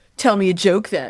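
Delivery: mocking put-on men's voice. Imitating men's prompts asking for a joke: mocking voice imitating men. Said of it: "They hate when I do that voice".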